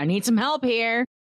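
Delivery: high, called-out delivery. In a tabletop game, a player's character calls to allies: shouting for help. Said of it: "then I will shout".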